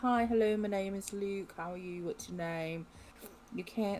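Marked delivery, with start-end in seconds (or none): none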